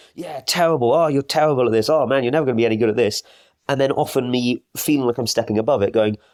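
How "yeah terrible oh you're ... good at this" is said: put-on yelling, berating, scolding voice. Acting out own inner critic after a climbing miss: imitating a yelling inner critic. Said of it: "being yelled at by my inner critic".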